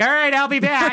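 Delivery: high, breezy, offhand sea captain voice.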